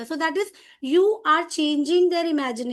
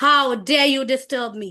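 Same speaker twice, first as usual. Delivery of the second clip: angry, furious king-of-the-jungle lion voice; 2 semitones lower than usual. Storyteller reading the lion's words after it catches the mouse, angry lion voice. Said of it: "He was very angry".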